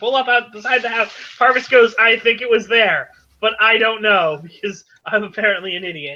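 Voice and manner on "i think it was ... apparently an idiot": usual speaking voice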